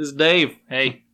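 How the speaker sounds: put-on Southern accent. Game master showing how they voice the NPC, in Dave's southern accent. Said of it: "southern accent".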